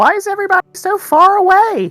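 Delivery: very small voice. A player voices his once burly character in a role-playing game, in a very tiny voice. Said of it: "you hear a very tiny voice in the place of a once burly man".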